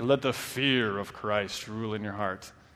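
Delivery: very low, deep, solemn-sounding reading voice. Saying a verse the King James way, deep voice. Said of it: "That like deep voice right there?".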